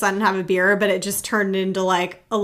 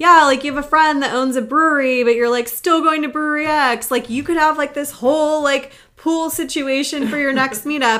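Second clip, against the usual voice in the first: teasing, playful, jokingly mad, high voice; 6 semitones higher than usual. Retelling how a man teased the speaker about skipping a friend's brewery: retelling someone jokingly mad. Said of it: "He's like jokingly mad at me".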